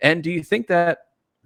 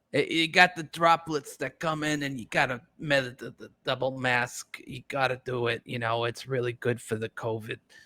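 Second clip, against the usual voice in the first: bad, halting, fumbling put-on doctor voice; 5 dB quieter than usual. Joking about masks, doing a bad impression: Anthony Fauci impression. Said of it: "That's the best, uh, Doctor Fauci I got".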